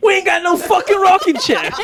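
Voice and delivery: very high, put-on Jersey accent. Retelling someone's words about a rocking chair, in a Jersey accent. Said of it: "The Jersey accent".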